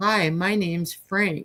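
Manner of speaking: mock soft-spoken voice. Retelling what a man said on opening the car door, soft-spoken. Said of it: "very soft spoken".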